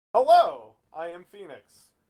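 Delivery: loud, rampant, comic, belted-out delivery. Voicing the ship's AI as it boots up: Jim Carrey voice. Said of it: "a Jim Carrey figure, like".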